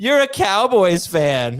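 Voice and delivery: slow, high, teasing and taunting voice.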